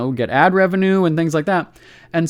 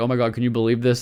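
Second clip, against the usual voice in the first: put-on laughing talk, faster; 5 semitones lower, 3 dB quieter than usual. Speaker retells a friend laughing over a cousin's post: retelling a friend laughing. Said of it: "she's laughing, going".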